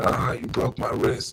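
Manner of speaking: restrained, mild scream from a man. Retelling how the man was taken to the ground: imitating a man screaming. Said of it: "he's screaming".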